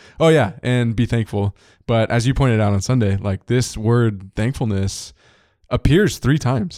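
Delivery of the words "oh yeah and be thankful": normal talking voice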